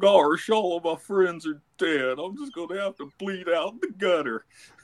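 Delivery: resigned, defeated cartoony voice, pitched high. Asked for a suicidal Goofy quote, the speaker answers in a resigned cartoony Goofy voice. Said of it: "I want to hear a cartoony Goofy that's like resigned".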